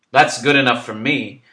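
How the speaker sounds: very loud, booming, roaring bellow. Tony backs up a friend who trusts a wandering woman, bellowing. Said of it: "Tony bellows".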